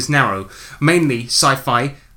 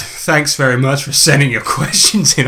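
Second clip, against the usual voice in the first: heavily sarcastic tone; 3 dB louder than usual. Thanking listeners at the end of a segment, sounding sarcastic. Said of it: "I did it so sarcastically".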